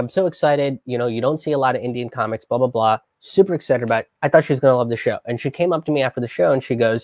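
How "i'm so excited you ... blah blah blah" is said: ordinary talk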